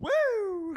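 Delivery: put-on high, loud whooping woo.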